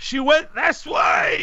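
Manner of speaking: shout-like cry pitched very high. Game narrator voicing a man calling after a fleeing old lady, yelling. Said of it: "he yells".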